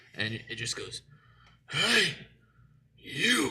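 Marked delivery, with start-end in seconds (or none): 1.7-3.5 put-on booming shout, much higher. Night-shift worker retells a voice calling out of nowhere, loud and booming. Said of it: "I hear a loud booming voice".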